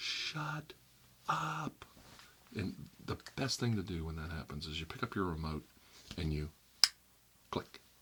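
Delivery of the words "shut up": very high, shrill, full-volume scream. Showing how loudly to scream at the tv: screaming as loud as possible. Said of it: "Okay, watch".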